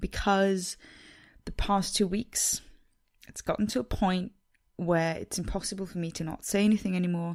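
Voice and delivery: quavering, unsteady, shaky, trembling voice. A podcast host speaking to listeners about the Me Too movement, in a shaky voice. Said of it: "my voice is as shaky as it is right now".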